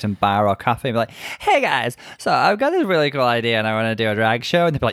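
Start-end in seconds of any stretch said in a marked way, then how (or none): 1.4-4.7 put-on slurred, drunk-sounding voice. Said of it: "That's an impeccable Crystal Method impression".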